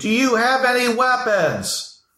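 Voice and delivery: very high, slow, drawn-out yell. Voicing a guard who questions the travelers: yelling in character. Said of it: "he yells at you".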